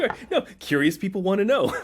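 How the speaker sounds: talking through laughter. Apologizing after being told to stop laughing: laughing while talking. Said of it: "You have to stop laughing".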